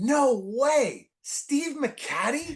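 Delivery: high, slow, drawn-out yell of disbelief. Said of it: "And I yell out".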